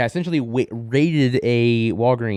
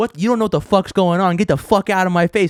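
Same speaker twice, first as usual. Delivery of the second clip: mock screaming at a higher pitch; 8 semitones higher, 3 dB louder than usual. Retelling how agents yelled at a man's sister-in-law: imitating officers screaming. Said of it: "they should not be screaming at these people".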